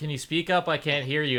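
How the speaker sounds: ordinary delivery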